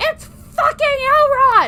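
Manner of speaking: high, loud, excited shout.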